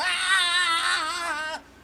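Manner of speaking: put-on yelling without words, child voice.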